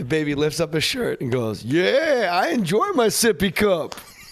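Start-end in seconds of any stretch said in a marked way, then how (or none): 1.6-4.0 loud, very slow, high-pitched drawl. Retelling how the baby answered when asked to do his impression: Tracy Morgan impression. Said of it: "he's doing a Tracy Morgan impression".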